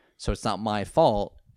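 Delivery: ordinary talk, nothing marked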